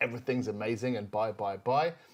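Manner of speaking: plain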